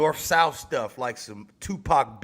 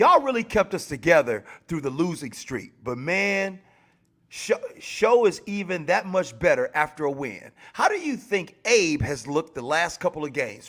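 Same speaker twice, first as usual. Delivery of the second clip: plain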